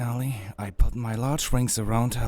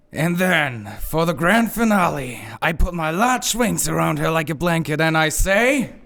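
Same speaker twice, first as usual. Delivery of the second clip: full-energy, pitched-up, energetic heroic delivery; 5 semitones higher, 3 dB louder than usual. Told to redo the speech with more energy, the would-be hero tries again, with more energy. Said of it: "Try doing it again with a little more energy".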